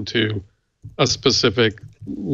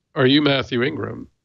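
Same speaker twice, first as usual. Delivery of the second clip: put-on suspicious, accusing border guard voice. Retelling a border guard's question at the border: imitating a suspicious border guard. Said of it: "said it in a way like there was something wrong".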